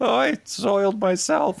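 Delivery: put-on high, slow, creaky child voice. Imitating the Simpsons retail kid taking tickets: Simpsons retail kid voice. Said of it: "the young kid who does all, like, the, the retail jobs on The Simpsons who talks like this".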